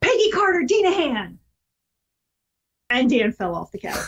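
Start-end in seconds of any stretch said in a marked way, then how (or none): 0.0-1.4 acted stern mom voice, yelling, pitched high. Retelling finally losing patience and yelling a full name, retelling a mom-voice yell. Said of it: "I put on the full mom voice and I yelled".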